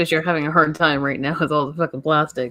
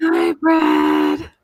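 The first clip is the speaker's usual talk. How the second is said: eerie, creepy put-on voice pitched very high; 11 semitones higher than usual. Saying a name after others ask for the creepy voice: put-on creepy voice. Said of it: "Nope, don't like it".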